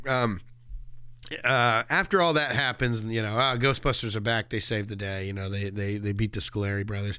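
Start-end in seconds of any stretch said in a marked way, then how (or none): none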